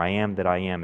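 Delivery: normal talking voice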